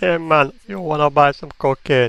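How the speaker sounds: put-on Jamaican lilt, slow and high. Joking after another speaker says "Rasta makes his appearance": put-on Jamaican accent. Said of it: "the only way I can do a Jamaican accent".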